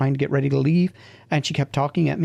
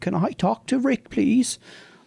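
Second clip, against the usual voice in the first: put-on feeble, quavering, shaky old lady voice, pitched up; 9 semitones higher than usual. Speaker retelling an old woman's phone call, imitating a little old feeble shaky voice. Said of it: "this little old feeble shaky voice came on".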